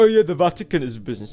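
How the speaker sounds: fast, high-pitched, loud mocking voice.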